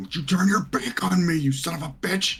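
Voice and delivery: very high, furious, raging yell. Playing a character who shouts at an enemy turning away: raging shout. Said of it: "he's gonna shout at this guy".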